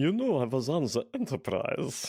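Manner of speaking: Russian accent. Showing how they would say Chekhov's line: Russian accent as Chekhov. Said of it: "This is how I would say it".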